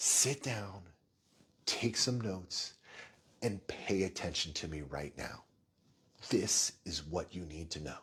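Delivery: hushed, serious voice. Addressing a presentation audience, the speaker demands attention in a soft, quiet voice. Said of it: "my soft, quiet voice".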